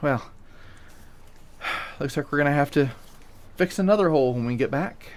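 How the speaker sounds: line spoken while sighing. Game master voicing a character after the crew pulls away from the reef, sighing. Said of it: "Allie just kind of sighs and goes".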